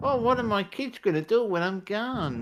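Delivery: very high, put-on elderly commercial-style voice. Mocking adverts aimed at old people: imitating an old person in an advert. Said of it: "That's basically all the old people adverts are".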